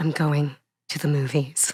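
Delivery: low, grand, dramatic stage-acting voice. Retelling how the actor at the closing performance said it, imitating very dramatic theatrical acting. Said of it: "in his most dramatic theatrical acting".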